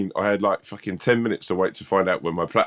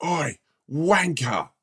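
put-on shout, much higher pitch; 8 semitones higher than usual. Recounting someone shouting from the Wetherspoons balcony, imitating a shout. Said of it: "someone shouts out from the balcony there".

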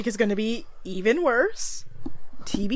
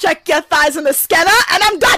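very loud, high, put-on Bronx accent; 6 semitones higher, 11 dB louder than usual. Retelling clocking in at a work body scanner, in a put-on Bronx accent. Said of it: "I put on my best Bronx voice".

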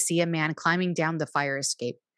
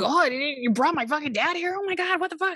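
panicky, disbelieving, freaked-out outburst, very high; 10 semitones higher than usual. Retelling how Neil reacts when his dad is brought: imitating Neil freaking out. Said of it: "freaking out that his dad is".

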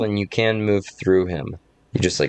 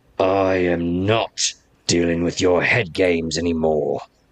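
snarled, hostile tone. Game master voicing a character after her saving throw, snarling. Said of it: "she snarls".

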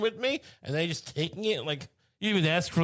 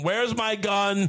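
acted yelling; 4 semitones higher than usual. Retelling seeing a man on the lawn and yelling at her: retelling a yell. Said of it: "I yelled at Megan".

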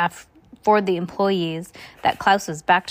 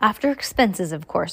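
ordinary delivery

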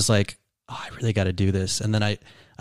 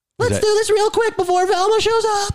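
put-on laid-back stoner voice, pitched way up; 4 dB louder than usual. A comedian doing Shaggy on request, Shaggy impression. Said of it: "Do Shaggy really quick".

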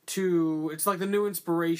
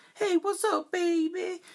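very high, slow, drawn-out jive-talking voice; 14 semitones higher than usual. Retelling how a character talked to girls: imitating jive-talking pickup line. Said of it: "I'm gonna talk like this jive talking".

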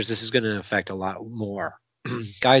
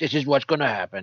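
TV sports announcer voice; 3 semitones higher than usual. Making a bold prediction for fantasy players: Chris Berman impression. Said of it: "That was my Chris Berman".

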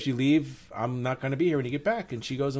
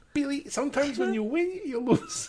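very high, animated, swooping pitch, put-on accent; 12 semitones higher than usual. Repeating the accent after the others failed to guess it: Rosie Perez impersonation. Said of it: "a Rosie Perez impersonation".

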